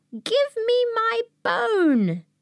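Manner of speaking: tiny, very high voice, "bone" drawn out. Reading a ghost story, the voice cries out from the cupboard: teeny tiny voice, bit louder. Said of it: "the teeny tiny voice again cried out from the teeny tiny cupboard, a teeny tiny bit louder".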